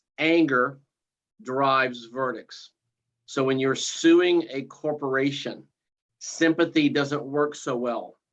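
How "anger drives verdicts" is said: slow, measured delivery, each word deliberately placed. Giving an expression for listeners to remember, said slow and deliberate. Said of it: "I'll say it slowly".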